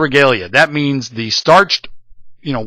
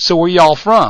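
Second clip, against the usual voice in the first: put-on drawling Texas accent, laid on thick; 2 semitones higher than usual. Retelling how a woman asked the family where they were from, with a texas drawl. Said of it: "says it with a Texas drawl".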